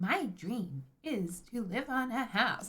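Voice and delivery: robotic text-to-speech reading voice. Speaker chatting with viewers about dream homes, in the TikTok robot voice. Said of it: "I've got the TikTok robot voice again".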